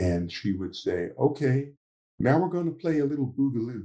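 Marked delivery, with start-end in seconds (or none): 1.2-3.8 put-on mild Southern accent from around the DC area. Recalling a lesson with Carol, imitating Carol's soft Southern accent. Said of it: "she had a very soft Southern accent".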